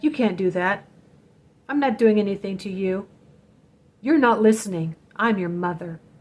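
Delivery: ordinary delivery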